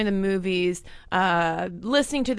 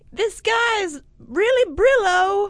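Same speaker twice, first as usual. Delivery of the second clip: put-on very high, slow, stretched-out flapper girl voice. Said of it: "She'd be like".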